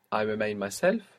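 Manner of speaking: normal talking voice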